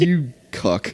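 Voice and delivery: mock sneer. Imitating a game character lifting the player up: imitating a sneer. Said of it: "sneering at you while he's doing it".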